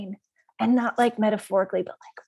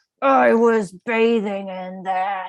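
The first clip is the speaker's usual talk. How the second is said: loud, bellowing, gorilla-like roaring demon yell; 6 dB louder than usual. Game master voicing a demon bursting from a wine cask, yelling gorilla demon. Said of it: "a gigantic gorilla-esque demon who barrels out and yells".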